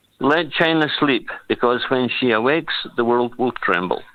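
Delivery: ordinary delivery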